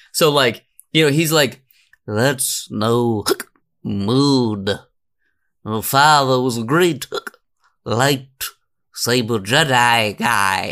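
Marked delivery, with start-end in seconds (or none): 2.0-10.7 put-on drunk voice, slower. Riffing on Obi-Wan Kenobi's family tree, speaking as drunk Obi-Wan Kenobi. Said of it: "Drunk Obi-Wan Kenobi".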